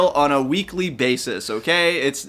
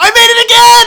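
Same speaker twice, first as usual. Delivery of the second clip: thrilled shriek, very high and very loud; 13 dB louder than usual. Playing a platform game and clearing a jump: screaming with excitement. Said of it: "I'm gonna stop screaming now!".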